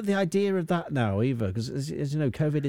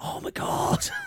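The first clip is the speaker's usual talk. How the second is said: put-on whispering voice. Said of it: "You were sort of whispering it".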